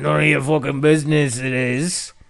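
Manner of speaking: imitated cranky voice. Retelling knocking on a cabin door: imitating a crotchety voice. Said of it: "this really crotchety voice".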